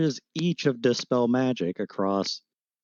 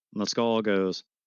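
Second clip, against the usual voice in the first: plain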